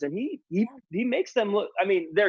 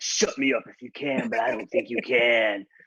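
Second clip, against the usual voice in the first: put-on old, scary wrestler voice, lower; 7 semitones lower than usual. Imitating Jake the Snake's promo after saying he sounds old: Jake the Snake voice. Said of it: "he's like".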